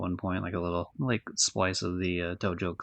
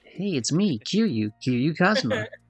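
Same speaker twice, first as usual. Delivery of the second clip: high, loud, swooping cartoon-hero voice; 8 semitones higher, 7 dB louder than usual. Voicing the game's hero introducing himself: almost a Sonic voice. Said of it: "With that fucking Sonic voice almost".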